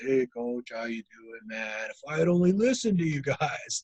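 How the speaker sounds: imitated, really deep put-on voice. Recalling a man who always came over to greet him, imitating a really deep voice. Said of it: "he had this really deep voice".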